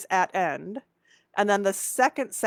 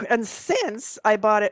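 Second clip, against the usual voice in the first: cracking voice, slower. Explaining a set of clues, voice cracking. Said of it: "my voice is cracking".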